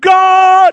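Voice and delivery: loud, high-pitched shouting cry.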